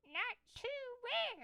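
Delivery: high, squeaky, shrill ventriloquist dummy voice. A narrator performing an act makes the dummy Dennis reply, in a high, shrill voice. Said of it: "I made the dummy reply in a high, shrill voice".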